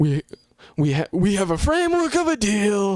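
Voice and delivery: stammering, stumbling, grand announcer-style delivery. Mocking a vague announcement about a deal: Trump voice. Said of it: "that's my best Trump voice".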